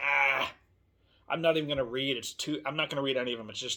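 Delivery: mock anxious, overwhelmed voice. Acting out a reader overwhelmed by all the continuation books: imitating an anxious reader. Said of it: "so anxious about all the continuation authors".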